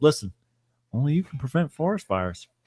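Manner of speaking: calm put-on bear voice. Acting out the bear from the commercials: calm Smokey the Bear voice. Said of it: "he's very calm".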